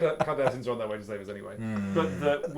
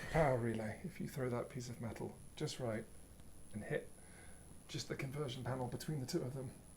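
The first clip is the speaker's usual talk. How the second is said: very quiet, soft, hushed whisper under the breath; 14 dB quieter than usual. Giving Barat an order in the middle of the action, whispering. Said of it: "And I will whisper".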